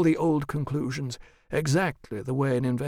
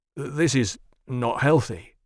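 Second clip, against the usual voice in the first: stammered words; 3 dB louder than usual. A man hearing an offer of payment, stammering. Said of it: "Blomqvist stammered".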